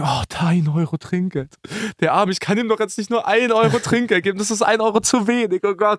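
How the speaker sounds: mock drunk, sentimental whine.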